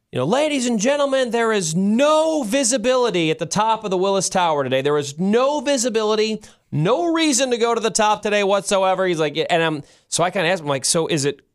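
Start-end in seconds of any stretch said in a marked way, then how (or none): 0.3-9.1 play-acted, high-pitched yell, projected loudly. Retelling a guy downstairs yelling at the crowd, retelling a yell. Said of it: "kind of just yelling at the crowd going".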